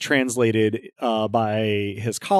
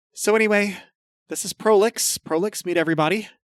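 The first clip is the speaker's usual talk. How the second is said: very high shouting; 10 semitones higher than usual. Narrating a game, voicing a character introducing the cat to everybody: shouting over noise. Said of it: "shouting over the noise".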